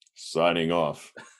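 robotic, mechanical machine voice. Ending the podcast, host signs off to the listeners in a robot voice. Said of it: "Robot voice".

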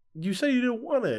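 very high, shrill, loud yelling shout. Speaker recalls a fight over food thrown in the garbage, retelling a yell. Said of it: "we're like yelling at each other".

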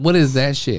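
ordinary talk

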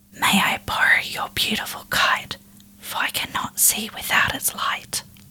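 eerie, layered, many-voiced creature whisper throughout. Narrator reading a creature's words to a child, whispering in many voices. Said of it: "In many voices it whispered to her".

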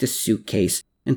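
ordinary delivery

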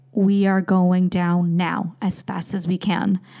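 ordinary delivery

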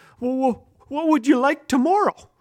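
shaky, trembling, unsteady, high-pitched voice. Narrating a school hallway scene, the boy answers Lester, who took his lunch, shaky voice. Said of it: "said in a shaky voice".

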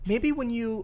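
very sweet, high, coaxing motherly voice.

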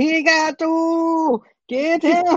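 put-on Indian accent, very high and slow, two stretched. Retelling a movie scene, doing an Arnold impression with Indian accent. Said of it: "you make him sound like he's Indian".

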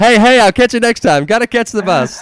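distant hollering. A speaker retells what a man who ran off with coffee hollered back, retelling a holler. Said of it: "he kept hollering back".

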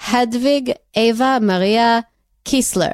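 Israeli-accented pronunciation. Asked by the other speaker to repeat the name, saying it in an Israeli accent. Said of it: "you have to do that again for me".

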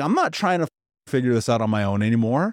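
ordinary talk, nothing marked

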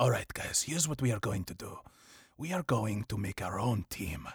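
low, soft, failed attempt at German accent. Picturing his character recruiting the Flag Smashers at the Raft: Baron Zemo, attempted German accent. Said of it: "that was not like a German-ish accent".

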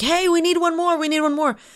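play-acted high, urgent scream. Retelling how the holder waved for one more player: imitating Ben Griffiths screaming. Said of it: "waving down, screaming".

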